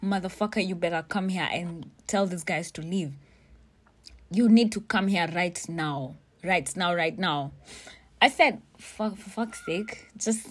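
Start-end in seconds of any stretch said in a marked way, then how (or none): 0.0-7.5 mock furious, fast, fuming tirade. Recounting calling the Matoke guy to get him over: retelling fuming. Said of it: "I call this Matoke guy and I'm fuming".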